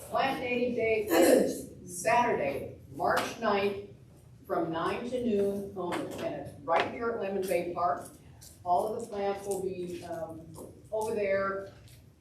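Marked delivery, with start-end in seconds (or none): 0.1-8.1 louder, projected voice carrying to the back. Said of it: "Can you talk a little louder?".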